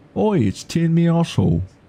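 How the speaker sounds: bad put-on English accent, thick and very high. Joking about a funny name, saying it as suggested: thick English accent. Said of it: "say it in a thick English accent".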